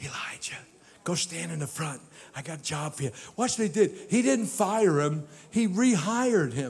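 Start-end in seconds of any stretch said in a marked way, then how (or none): 0.0-3.1 very soft, quiet whisper. Retelling how the Lord spoke quietly to Elijah: whispered voice. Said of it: "talked to him in a s-, whispered voice".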